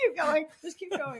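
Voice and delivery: crying with laughter. Urging the others to go on mid laughing fit: laughing to tears. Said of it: "You're a mess".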